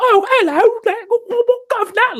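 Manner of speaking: put-on very high, loud, old-fashioned English page boy voice. Imitating a game character's voice: imitating an English page boy voice. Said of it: "has this English page boy, uh, voice".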